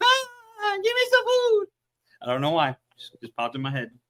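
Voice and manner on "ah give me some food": put-on very high, slow little-kid voice. Picturing Big Llama running around with his hands up, imitating Big Llama like a kid. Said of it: "running around like a little kid with his hands up".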